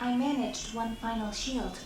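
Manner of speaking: synthetic robot voice. A game character speaks in a robot voice. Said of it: "emotionally attached to the robot voice".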